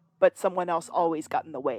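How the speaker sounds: ordinary talk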